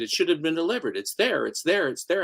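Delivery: ordinary talk, nothing marked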